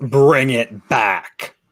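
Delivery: warped, horribly distorted, monstrous bellowing growl. Narrating the moment it bellows at the puppy: horribly distorted growl. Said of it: "in this horribly distorted growl of a voice".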